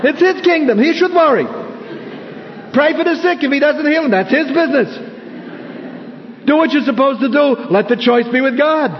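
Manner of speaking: put-on Yiddish-inflected accent.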